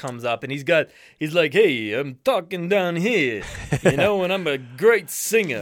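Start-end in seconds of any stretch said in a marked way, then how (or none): 1.5-5.6 put-on thick Italian accent. Retelling a man from America's Got Talent, imitating a thick Italian accent. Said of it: "how thick this guy's".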